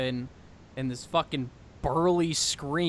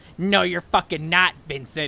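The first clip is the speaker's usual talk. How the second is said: motherly character voice; 3 semitones higher, 6 dB louder than usual. Retelling the mom refusing the backflip plan, imitating Deanna. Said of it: "I'm sorry for my impression of you".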